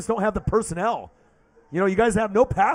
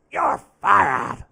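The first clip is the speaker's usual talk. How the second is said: put-on rough, creaky, rasping voice; 3 semitones lower than usual. Repeating the catchphrase for the fans after naming the impression, Vince McMahon impression. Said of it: "That's my Vince McMahon impression there".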